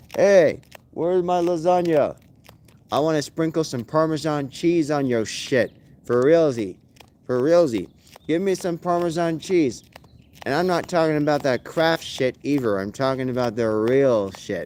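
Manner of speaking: usual speaking voice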